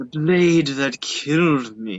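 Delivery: snarled, beastly, snarling creature voice. A game master voices a creature shambling through the mist: snarling. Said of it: "and it snarls".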